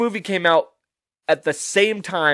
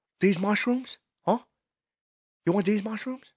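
quiet, a touch higher pitch; 5 semitones higher, 8 dB quieter than usual. Trying out how De Niro would sound playing Mario, in a De Niro impression. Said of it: "Can I pull off a De Niro?".

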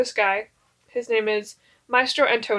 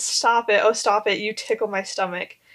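ordinary talk

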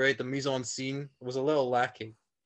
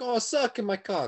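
put-on Italian accent; 9 semitones higher than usual. Retelling a scene where a man berates a woman, in an Italian accent. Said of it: "you're doing like an Italian accent".

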